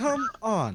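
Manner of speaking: metallic, ringing, high-pitched voice. Showing how Moss says it to Talia, in Moss's metallic voice. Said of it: "in Moss's metallic voice".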